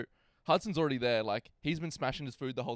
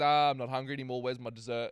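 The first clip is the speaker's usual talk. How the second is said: plain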